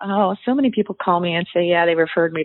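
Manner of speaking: ordinary talk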